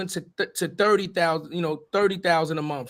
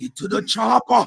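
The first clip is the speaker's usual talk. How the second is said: rough, creaky, rasping put-on character voice; 4 semitones higher, 5 dB louder than usual. Telling the others which voice you gotta throw in, then doing it: Arnold voice. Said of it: "you gotta throw in the Arnold voice".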